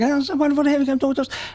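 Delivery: high-pitched mimicking voice. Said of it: "she's like".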